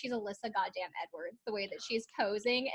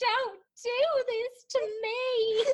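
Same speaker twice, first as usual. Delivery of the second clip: mock dramatic sobbing, higher pitch; 12 semitones higher, 3 dB louder than usual. Retelling a child refusing to get ready for photos, imitating dramatic sobbing. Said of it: "really sobbing about it".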